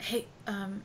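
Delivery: very soft, eerie whisper.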